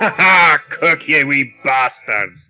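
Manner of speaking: loud, hearty laughing in a pirate voice. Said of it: "Yargval is laughing heartily".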